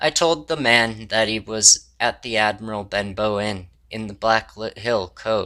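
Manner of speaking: plain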